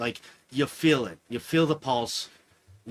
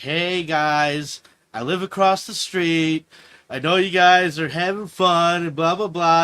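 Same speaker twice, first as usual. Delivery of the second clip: raised complaining voice, "guys" drawn out; 5 semitones higher, 7 dB louder than usual. Retelling going up to the neighbors across the street, acting like a complaining neighbor. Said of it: "trying to be like that dude that's about to complain".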